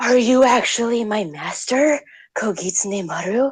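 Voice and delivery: high-pitched, utterly shocked exclamation. Retelling Mikazuki turning away from the other sword, acting Mikazuki mock-shocked. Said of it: "in a most shocked voice".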